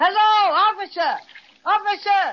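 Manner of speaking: big-voiced, high-pitched yell. After another's call to the policeman goes unheard, he takes over, yelling in a big voice. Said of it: "Let me do the yelling".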